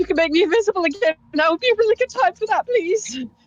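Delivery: loud yelling out. Calling out in character to another character mid-fight: yelling out. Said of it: "I am gonna yell out to Erilyn".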